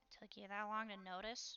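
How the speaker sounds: muttered under her breath. A character replies to a companion's quiet warning, speaking under her breath. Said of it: "Katya says under her breath".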